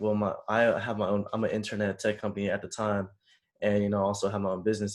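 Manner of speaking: ordinary delivery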